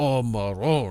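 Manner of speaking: heavily overdone, put-on Italian accent. Mocking how people pretend to be overly Italian: exaggerated Italian accent. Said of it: "like that ... That's people pretending to be heavily, uh, overly Italian".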